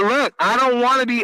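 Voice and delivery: ordinary talk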